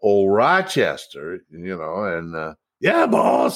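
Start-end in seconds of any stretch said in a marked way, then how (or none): 2.0-3.6 gravelly butler voice with a rough edge. Recalling a butler from old comedy, quote him in a gravelly Eddie Rochester Anderson voice. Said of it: "He had that gravelly voice".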